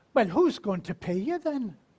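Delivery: put-on Scottish accent with pitch rising at the end. Retelling what the speaker's mother said when they became a minister, in her Scottish accent. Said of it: "my mother says to me in her Scottish accent".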